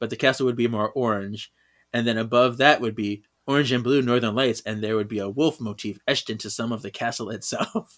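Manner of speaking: normal talking voice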